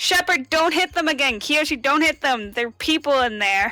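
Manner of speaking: shouting in a put-on character voice. Playing a character who warns the others in a fight: in-character yell. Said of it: "but I'm just yelling it".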